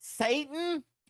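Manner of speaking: very high, shocked church lady gasp, popped out.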